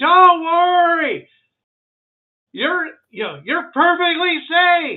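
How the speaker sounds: piercing, very loud, high-pitched shout. Speaker acts out what you'd hear somebody yelling, retelling a yell. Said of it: "You you hear somebody yelling".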